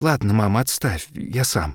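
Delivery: quavering, trembling, shaky, unsteady voice. A boy pushes away his mother's help with his coat, voice trembling. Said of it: "голос дрожит".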